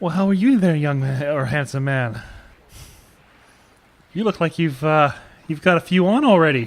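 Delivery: very loud, flirtatious calling voice. Flirting in character with the ship's captain: flirting. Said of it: "I'm gonna start flirting with him".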